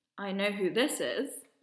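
toneless, dead-even, flat monotone. Telling a story about a phone call, the speaker repeats the caller's words: flat monotone voice. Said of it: "In a monotone accent".

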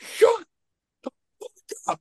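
mock, mild, half-yelled scolding tone. Retelling yelling at noisy kids at a movie screening, retelling a scream. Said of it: "I like actually screamed at them to shut up".

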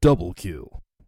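booming, loud voice projected far. Describing the announcer of Halo to another speaker: Halo announcer voice. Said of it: "That's always like".

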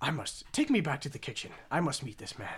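put-on half-whispered, breathy, very posh British accent. Telling a story, a diner asks to meet whoever made the dish, in an even more posh accent. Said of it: "with an even more posh accent".

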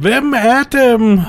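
acted-out shout. Retelling a round of a shooting game, re-enacting a shouted question. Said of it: "Og jeg råber".

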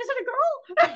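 high, hopeful voice.

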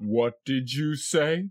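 imposing, intimidating, low, menacing, looming voice. Retelling a movie scene, Santa looming over the boy: imitating an intimidating Santa. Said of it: "looming over him and intimidating him and says".

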